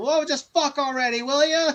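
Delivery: play-acted, high heckling yell. Retelling what someone in the theater yelled: imitating someone yelling. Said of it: "someone yelled".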